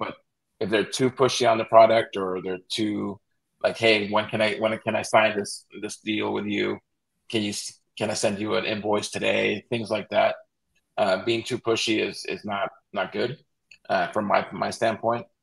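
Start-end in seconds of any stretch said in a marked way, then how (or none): none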